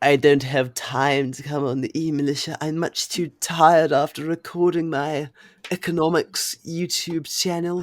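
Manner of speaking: bad put-on British accent. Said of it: "failing at putting on a British accent".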